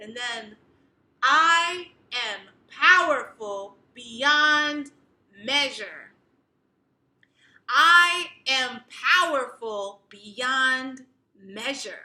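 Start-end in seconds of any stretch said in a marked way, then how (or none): 1.2-12.0 very loud, proud, booming, chest-out delivery. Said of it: "Speak it proudly, say it loudly".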